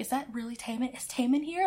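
hushed half-whisper full of disbelief. Retelling an audience member asking others about [name]: imitating someone half-whispering. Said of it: "he's whispering to people".

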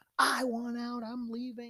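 high-pitched, screamed outburst. Retelling what the director screamed on live tv: imitating someone screaming. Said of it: "He started screaming at her".

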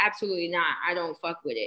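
ordinary delivery

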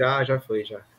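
soft, low, hushed voice. Answering that she already went to sleep, speaking quietly. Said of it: "Tô falando baixinho pra ela não acordar".

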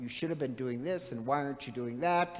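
ordinary delivery

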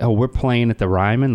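plain

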